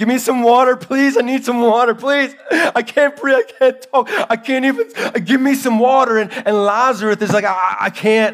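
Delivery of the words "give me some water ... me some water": mock crying scream, higher. Acting out the rich man in the story, retelling a crying scream. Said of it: "he's crying and he's screaming".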